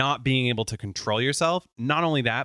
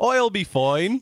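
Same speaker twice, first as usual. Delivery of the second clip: clumsy put-on Irish accent, high and loud; 8 semitones higher, 5 dB louder than usual. Mocking a co-host's practiced phrase by repeating it, in a bad Irish accent. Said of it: "practicing my Irish accent".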